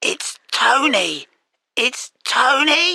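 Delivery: bad sore-throat voice, name drawn out. Tony, on the phone with Mai, who can't hear him: sore-throat voice. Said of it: "What's the matter with your voice?".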